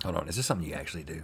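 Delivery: very quiet, hushed, barely audible half-whisper. Asking the other speaker whether this is something they actually do: half-whispering. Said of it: "Are you whispering?".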